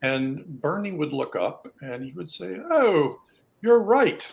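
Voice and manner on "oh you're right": put-on high-pitched, loud British accent. Retelling how a doctor answered a medical student who spoke up, do Bernie's British accent. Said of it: "in his British accent".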